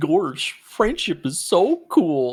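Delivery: silly, goofy cartoon character voice, swooping pitch. Asked to let viewers hear it, saying a game line in Goofy voice. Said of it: "Do you want to let them hear your Goofy voice?".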